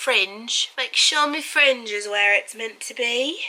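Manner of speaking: put-on British accent, done for show. Describing a hair routine, switching bangs to fringe: British accent. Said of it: "if I'm doing a British accent".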